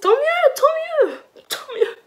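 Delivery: fake cheerful tone.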